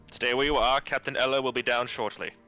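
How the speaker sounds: loud, high-pitched shout. Playing a guard ordering arrivals to stay put: shouting. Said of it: "why is he shouting at us?".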